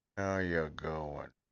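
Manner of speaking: sleazy, predatory, charming male voice. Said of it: "is it a certain character type".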